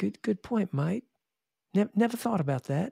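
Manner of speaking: put-on Australian accent. Retelling what guys have said to him, in an Aussie accent. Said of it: "They got the Aussie accent".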